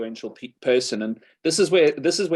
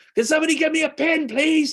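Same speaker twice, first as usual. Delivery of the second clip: very high, properly irritated, yelled scream; 3 dB louder than usual. Retelling how a man screamed into his house, imitating someone screaming. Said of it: "screamed into the house".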